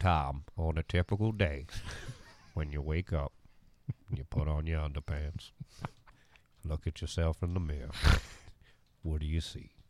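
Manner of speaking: put-on celebrity narrator voice, deep and soft. Asked to pose a question in the Morgan Freeman voice: Morgan Freeman voice. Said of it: "say it in the Morgan Freeman voice".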